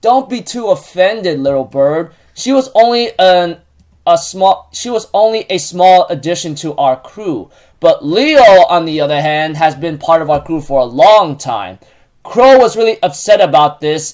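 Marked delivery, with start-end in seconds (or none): none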